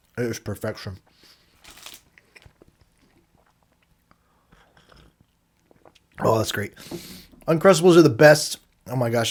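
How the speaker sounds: talking while eating, mouth full. Tasting a sandwich just unwrapped, talking with mouth full. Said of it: "I'm sorry if I have peanut butter in my mouth".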